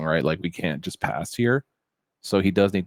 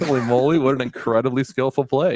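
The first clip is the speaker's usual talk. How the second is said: dry, fake-admiring sarcastic tone with raised pitch; 7 semitones higher, 4 dB louder than usual. Commenting on a player's play in the game: sarcastic mock praise. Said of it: "being a little sarcastic".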